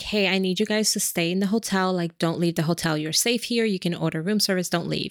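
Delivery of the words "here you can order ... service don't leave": normal talking voice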